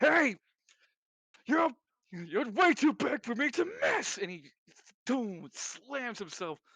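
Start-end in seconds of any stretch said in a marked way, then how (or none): 0.0-4.2 loud, high-pitched shout in a character voice. Voicing a character shouting while flying at a big target: shouting in character. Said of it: "Lance shouting".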